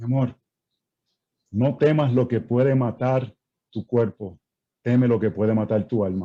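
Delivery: pious, holy-sounding, sermon-like tone. Retelling a reply to a spouse at night: imitating a pious spiritual voice. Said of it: "me puse bien espiritual".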